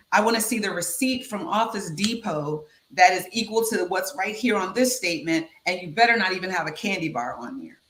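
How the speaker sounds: usual speaking voice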